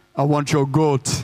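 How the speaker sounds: put-on slow Jamaican-sounding accent. Retelling a tribe chief's demand for a goat: Jamaican-sounding accent. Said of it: "That's more Jamaican".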